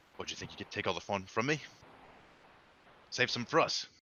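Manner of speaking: menacing, goading put-on bandit voice. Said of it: "looks up menacingly".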